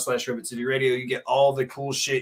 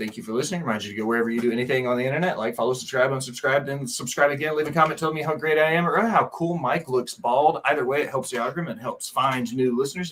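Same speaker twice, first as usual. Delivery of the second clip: very fast rapid-fire patter, barely a pause. Closing the podcast episode, rattle through the thanks and plugs, talking really fast. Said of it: "before I talk real fast".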